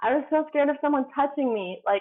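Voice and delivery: ordinary talk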